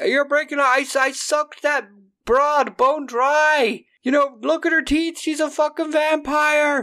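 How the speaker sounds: mock, very high, unhinged shrill screaming, dry drawn out. Telling how a man dragged out of a club screamed: retelling a scream. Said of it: "he's screaming like".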